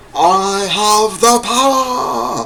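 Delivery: high, slow, triumphant cry. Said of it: "Had to say it".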